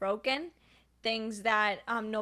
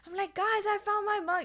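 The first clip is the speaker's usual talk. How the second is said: acted, very high, delighted shriek; 10 semitones higher than usual. Retelling telling the instructors about a found mug: retelling a happy scream. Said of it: "I'm screaming at the, the instruct-, in a happy manner".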